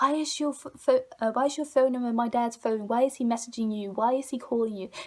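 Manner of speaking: acted frenzied, demanding voice, tripping over words. Retelling a phone call from a girl: imitating a girl in a frenzy. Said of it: "a girl who was very much in a frenzy".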